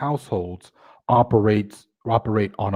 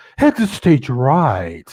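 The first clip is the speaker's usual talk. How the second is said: put-on slow, swooping cartoon character voice; 3 semitones higher, 4 dB louder than usual. Showing how a man talks by doing an old Hanna-Barbera cartoon character voice. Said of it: "He used to talk like".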